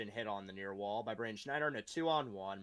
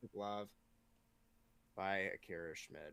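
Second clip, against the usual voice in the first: dejected, upset, lower and quieter; 4 semitones lower, 7 dB quieter than usual. Calling a glove save during play-by-play, sounding upset and depressed. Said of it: "You sound very upset there".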